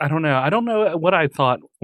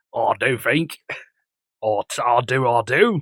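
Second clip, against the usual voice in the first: put-on English accent; 3 semitones lower than usual. Repeating a quoted line to mock it: mock british accent. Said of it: "sorry, all of our English listeners".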